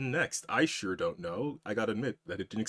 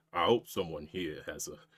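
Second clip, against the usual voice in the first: exaggerated cowboy drawl, lower pitch; 5 semitones lower than usual. Showing what an overdone version would sound like: full cowboy accent. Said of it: "full cowboy".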